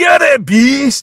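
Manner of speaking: put-on very high, very slow, terrible Scottish accent. Retelling what a guy kept saying to someone, terrible Scottish accent. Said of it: "pardon my terrible Scottish accent".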